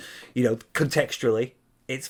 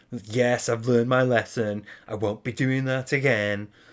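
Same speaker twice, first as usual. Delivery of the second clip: put-on sulky, resentful child tone, bitter and sarcastic. Imitating someone claiming to have learned their lesson: imitating bitter sarcasm. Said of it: "like a punished child that's still bitter about being punished".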